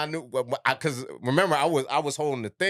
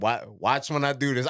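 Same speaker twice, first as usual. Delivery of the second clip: ordinary delivery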